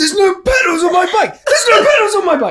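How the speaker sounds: very high, loud yelling. Retelling a triathlon mishap, acting out shouting at everyone: retelling shouting at everyone. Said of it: "I was literally shouting at everyone".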